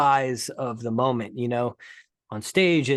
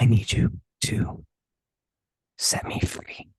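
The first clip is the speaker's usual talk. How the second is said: slow, drawn-out, breathy whisper; 2 semitones lower than usual. Retelling a scene partner on set whispering a line: imitating Kerry Washington whispering. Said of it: "literally whispering like this".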